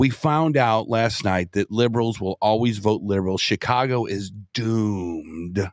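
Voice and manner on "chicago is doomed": put-on, deliberately deepened, doomed, drawn-out voice. Giving an opinion about a city's future: put-on deep voice. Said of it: "I say that in my deep voice".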